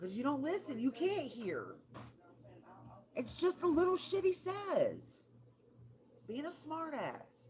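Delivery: high, loud annoyed rant. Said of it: "I got an-, annoyed".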